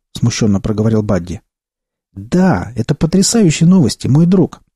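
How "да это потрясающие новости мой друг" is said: crying out in joyful delight. Albert answers his friend Buddy about the news, exclaiming. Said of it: "воскликнул Альберт".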